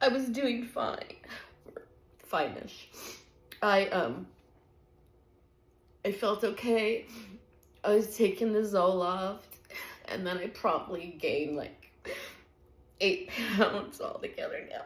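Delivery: tearful crying voice. Speaker who says they can't stop crying keeps talking, crying. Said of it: "I can't stop crying".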